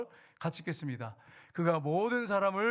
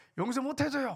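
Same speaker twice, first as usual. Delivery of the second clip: heated, angry tone, pitched up; 7 semitones higher than usual. A preacher retells a pastor's wife refusing his apology, imitating an angry wife. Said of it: "막 이렇게 화를 내는 거예요".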